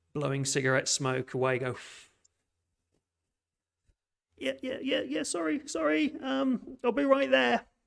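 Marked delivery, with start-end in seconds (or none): 1.6-7.6 put-on elderly lady voice, very high. Narrator voicing an oldish lady coming through the back door, old woman's voice. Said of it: "kind of almost an old woman's voice".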